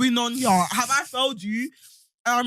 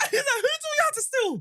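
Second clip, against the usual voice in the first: imitated screaming, much higher. Retelling how his dad screamed at him in front of a police officer: retelling a dad screaming. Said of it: "Screaming at me".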